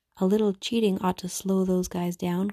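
usual speaking voice

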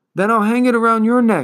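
urgent, high calling-out cry. Atreyu speaks to his horse Artax, crying out. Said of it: "Atreyu cried".

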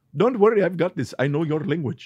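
put-on Indian English accent. Recalling a trip to India and imitating a local speaker: imitating an Indian speaker. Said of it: "that was really good impression".

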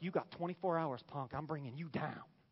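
acted, menacing, tough, threatening taunting tone. Retelling a threat to a prophet, imitating a threatening woman. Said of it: "She's like".

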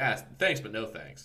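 ordinary talk, nothing marked

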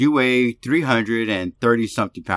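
ordinary delivery

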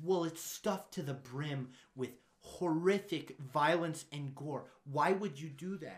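put-on appalled, angry, concerned parent voice. Retelling a parent questioning a film director on local news: imitating an angry, concerned parent. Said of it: "this angry, concerned parent".

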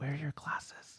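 hushed voice. Retelling what they kept asking during the movie: whispering. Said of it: "Why are we whispering?".

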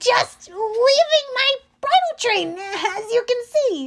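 voice pushed into high falsetto. Narrator reading Grover's answer to the monster: Grover's falsetto voice. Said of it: "Grover said in his falsetto voice".

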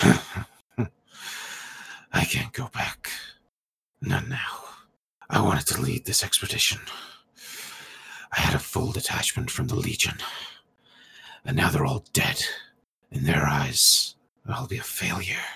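gravelly laughing voice. Voicing a defeated soldier answering a player, gravelly graveyard laugh. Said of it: "he's got this very sort of gravelly graveyard laugh".

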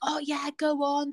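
acted high-pitched, spiteful, angry screaming. Speaker retells a woman screaming at them across a bar, imitating someone screaming. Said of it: "she was like screaming at me".

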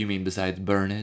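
put-on sassy male voice.

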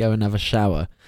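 ordinary talk

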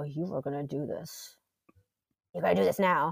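quiet, hushed, menacing and scary. Retelling threatening a screaming child up close: retelling own quiet, scary threat. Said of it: "So I got quiet and scary".

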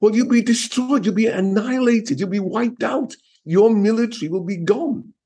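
heartfelt, emotionally charged delivery. Speaker talking to a conversation partner admits sounding emotional; a bit emotional. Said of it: "I sound a bit emotional about this".

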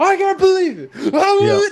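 play-acted, very high, loud, berserk freak-out. Retelling how the co-host sounded before the show: imitating someone freaking out. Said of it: "He was freaking out".

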